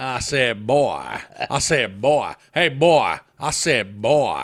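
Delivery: very loud, booming cartoon rooster voice, wide pitch swings. Speakers recall old cartoons; one quotes a character in a Foghorn Leghorn impression. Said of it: "Foghorn Leghorn".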